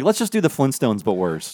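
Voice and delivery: ordinary talk, nothing marked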